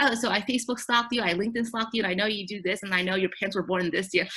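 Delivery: ordinary talk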